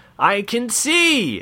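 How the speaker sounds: sudden high-pitched shout. A man who has just opened his eyes, shouting. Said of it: "he shouted".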